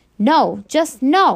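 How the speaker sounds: loud, furious, bellowing roar. A mother answers her child during an argument, roaring. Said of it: "my mother roars".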